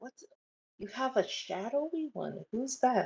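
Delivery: hushed, soft, half-whispered stage whisper. Leaning down to a child in a game scene, half-whispering. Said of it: "I will lean down and whisper".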